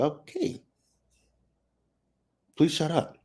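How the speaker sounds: high, exasperated pleading voice.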